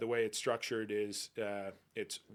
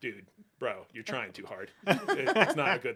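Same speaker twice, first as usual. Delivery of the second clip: mock skeptical tone in a put-on kid voice; 6 dB louder than usual. A dad retelling his skeptical middle kid's reaction, mimicking a skeptical kid. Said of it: "my more skeptical middle kid".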